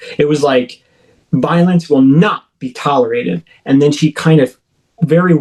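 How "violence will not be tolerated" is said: put-on angry woman's voice. Retelling what a woman said to the speaker: imitating an angry woman. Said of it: "like she was instantly angry".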